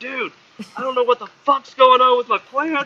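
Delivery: mock very high, loud, frantic freaked-out panic. Retelling calling the people who taught growing: imitating own panicked past self. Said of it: "calling them fucking freaking out, being like".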